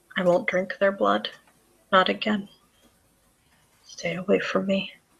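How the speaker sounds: muttered, hushed half-whisper under the breath. Narrating, the speaker gives a companion's muttered words, half-whispering under his breath. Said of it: "you hear him whispering under his breath".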